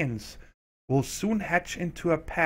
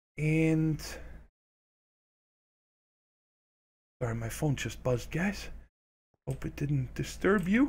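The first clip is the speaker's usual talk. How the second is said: hushed whisper. Apologizing to viewers that a phone just buzzed: whispering. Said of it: "Why am I whispering?".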